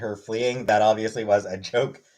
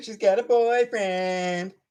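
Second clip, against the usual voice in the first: put-on high, drawn-out, teasing young girl voice; 8 semitones higher than usual. Pretending to taunt someone like a sixth grade girl, mock-taunting childish teasing. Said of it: "pretend to be taunting her by saying".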